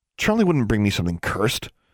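ordinary delivery, nothing marked

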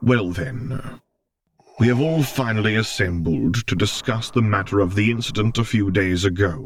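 rumbling, weighty delivery. Narrator reads a man opening a formal hearing, rumbling. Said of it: "he rumbled".

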